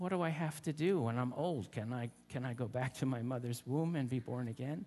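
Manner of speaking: ordinary delivery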